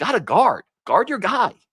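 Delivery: exasperated tone of voice.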